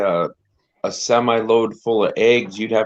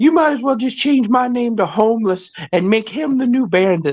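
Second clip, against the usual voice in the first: very high, put-on dog voice; 13 semitones higher than usual. Retelling how a guy speaks for his dog: voicing the dog. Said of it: "the guy's doing the voice for the dog".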